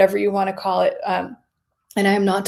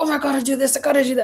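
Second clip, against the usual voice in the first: put-on anxious, pitched-up fretting; 5 semitones higher than usual. Acting out an anxious inner voice about health goals: acting anxious. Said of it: "and you get anxious".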